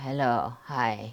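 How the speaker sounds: mock deep masculine voice. Retelling first words spoken after surgery, imitating a deep manly voice. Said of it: "my voice is so deep, like a guy, like a man".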